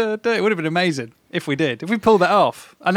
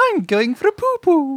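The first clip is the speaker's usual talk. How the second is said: goofy put-on voice, very high and slow; 9 semitones higher than usual. Recalling what they answered about where they were going, silly put-on voice. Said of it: "in a silly voice, like that".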